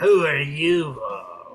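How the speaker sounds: hostile, very mean, nasty tone. Narrating a tabletop game, voicing the madcap who meets the party, very mean voice. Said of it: "He says in a very mean voice".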